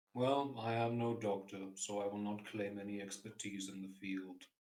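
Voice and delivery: very quiet, level, flat deadpan monotone. A player voicing his character in a tabletop game, in a flat, very quiet monotone. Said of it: "your monotone is outstanding, but you are very quiet".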